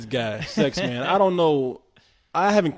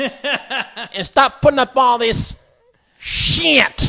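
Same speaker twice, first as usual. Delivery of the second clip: put-on Kentucky accent, higher-pitched and louder; 9 semitones higher, 5 dB louder than usual. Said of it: "he talks like this".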